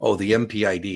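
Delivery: ordinary delivery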